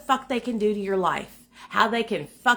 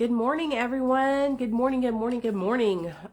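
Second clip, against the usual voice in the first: sick, ill-sounding, congested voice. Greeting everyone to start the morning: sick, congested voice. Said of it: "I sound horrible still".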